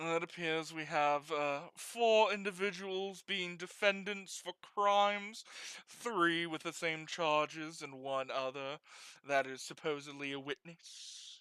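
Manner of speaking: put-on British accent in a judge-like voice. Voicing a judge opening a case: British accent. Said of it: "I don't know why I'm making him British".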